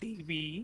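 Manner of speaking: voice cracking, breaking mid-line. Asking a co-host a teasing question, voice cracking. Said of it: "Oh, voice crack".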